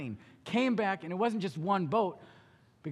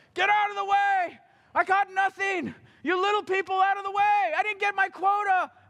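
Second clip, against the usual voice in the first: mock yelling, very high, loud and screaming; 12 semitones higher, 5 dB louder than usual. Speaker retelling a man arriving at crowded docks, acting out his screaming. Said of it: "Could you hear him screaming and yelling?".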